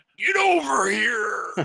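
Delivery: loud, high, belted-out shout. Casting a whip spell in a game, shouting like Scorpion: Scorpion voice. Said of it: "use my best scorpion from Mortal Kombat".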